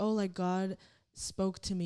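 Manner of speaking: ordinary delivery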